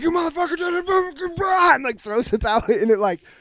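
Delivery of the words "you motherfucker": mock, very high, shrill raging scream. Telling a story about a man screaming at a kid in a warehouse, retelling a scream. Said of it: "he was screaming at this kid".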